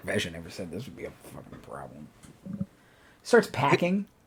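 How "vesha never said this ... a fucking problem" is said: muttered, much quieter and lower. Narrating a cornered character who grumbles his complaint, muttering under his breath. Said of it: "Kind of mutters under his breath".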